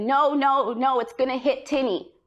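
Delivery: high, drawn-out mild scream held to talking level. Recalling being hit by a truck, the speaker acts out the parents: imitating parents screaming. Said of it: "my mom screamed and my dad screamed and they said".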